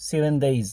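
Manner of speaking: ordinary delivery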